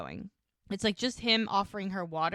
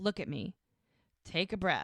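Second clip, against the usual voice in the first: plain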